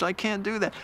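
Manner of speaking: very weak, feeble, failing voice. Retelling what the injured, bleeding backseater said: imitating a very weak voice. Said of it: "in a very weak voice".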